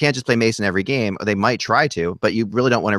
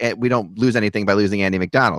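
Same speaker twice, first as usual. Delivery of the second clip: ordinary delivery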